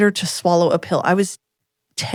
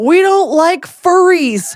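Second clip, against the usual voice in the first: play-acted, loud, very slow, drawn-out shout; 9 semitones higher, 6 dB louder than usual. Retelling someone shouting out of a rolled-down car window: imitating a shout.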